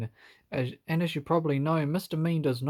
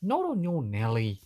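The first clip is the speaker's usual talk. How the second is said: impudent, cheeky voice. Narrator reading a story, Little Miss Naughty answering the wolf, cheeky reply. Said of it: "replied little Miss Naughty cheekily".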